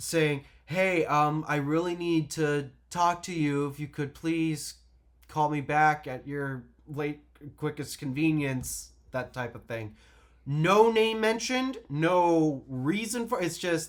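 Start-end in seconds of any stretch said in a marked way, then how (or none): none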